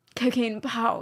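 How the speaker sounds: put-on, very upper-class RP accent. Show how he always says these words instead of cocaine or coke, in a very rp accent. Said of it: "in a very R P way".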